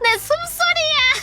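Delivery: mock laughing outburst. Retelling a scary hallway moment, the speaker imitates a senior bursting out laughing. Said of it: "빵 터져가지고 ... 이러면서 웃어가지고".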